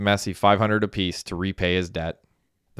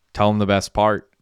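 ordinary delivery

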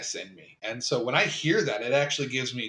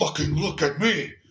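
abrupt, sudden, menacing outburst; 3 semitones higher, 3 dB louder than usual. Imitating the villain's voice turning suddenly: imitating a sudden psychopathic snap. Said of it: "It turns suddenly".

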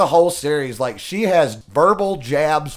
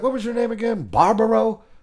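pitched-up, unimpressed, couldn't-care-less tone; 6 semitones higher than usual. Retelling a scene where Olenna Tyrell mocks a girl's name: imitating Olenna Tyrell. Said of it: "she's like".

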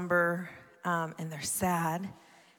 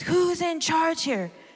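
put-on wild, crazy, very high-pitched German accent; 11 semitones higher, 3 dB louder than usual. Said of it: "With that, like, crazy German voice".

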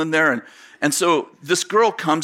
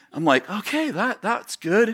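usual speaking voice

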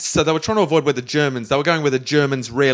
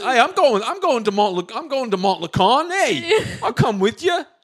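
put-on New York accent, higher pitch; 9 semitones higher than usual. Voicing a made-up character heading to town to see his wife: Big Tony Tones voice. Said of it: "so he's like".

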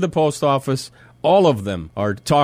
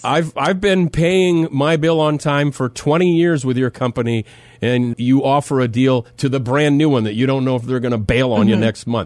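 ordinary delivery

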